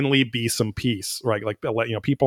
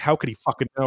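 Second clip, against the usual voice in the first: mock frantic, panicked, losing-it swearing outburst; 3 semitones higher than usual. Retelling a minister's reaction to a letter: imitating someone freaking out. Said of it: "freaking out".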